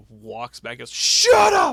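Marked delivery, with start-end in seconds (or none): 0.9-1.7 very high, shrill yell at full volume. Retelling a wrestling segment where one wrestler snaps at another: imitating JBL yelling. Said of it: "Just yells at her".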